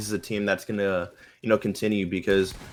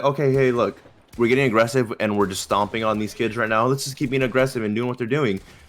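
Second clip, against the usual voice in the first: ordinary talk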